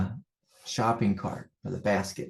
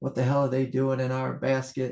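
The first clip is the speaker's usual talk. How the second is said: put-on yell, sketched lightly and mild; 4 semitones higher than usual. Retelling a mix-up with the chips at the store: imitating his own yelling. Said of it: "I'm yelling at them".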